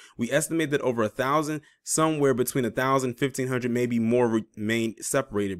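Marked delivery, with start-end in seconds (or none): none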